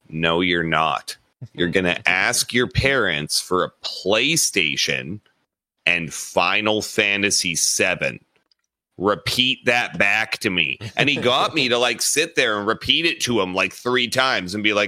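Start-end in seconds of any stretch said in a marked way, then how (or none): 0.1-10.8 mock gravest tone imaginable, dead serious. Retelling what someone told him at twelve about his Christmas list, imitating a dead-serious tone. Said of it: "in the most serious tone I had experienced at 12 years old".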